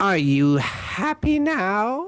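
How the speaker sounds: high-pitched, very drawn-out delivery of every word. Acting out a scene with a partner as Joker: Joker voice. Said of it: "I'm Joker".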